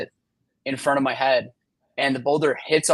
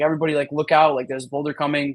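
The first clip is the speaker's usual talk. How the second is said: plain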